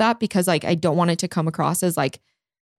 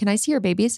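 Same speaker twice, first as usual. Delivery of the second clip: ordinary talk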